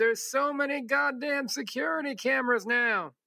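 put-on high, hacky old man voice. Quoting an old man's answer about what changed, hacky old man voice. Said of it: "hacky old man voice".

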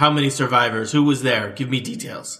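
loud, echoing, commanding voice that fills a hall. Voicing a glowing-eyed figure promoting a player: echoing voice filling a hall. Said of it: "the voice echoes throughout the hall".

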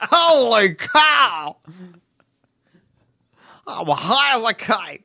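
loud, slow, high, with cow stretched out. Doing another bit after being asked for one: Harry Caray impression. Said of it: "Give me another Harry Carey".

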